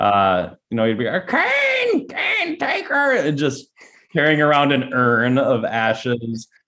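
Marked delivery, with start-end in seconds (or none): 1.3-3.1 strange high-pitched squeal, each word stretched out. Picking a winner between two wrestlers: Paul Bearer impression. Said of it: "until [name] did the impression".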